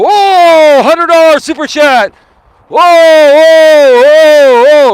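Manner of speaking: put-on shrill, booming, very loud excited yell, drawn-out whoas. Retelling how he reacted live on air to a big super chat: imitating his past excited yelling. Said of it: "I just probably clipped my microphone here yelling like that".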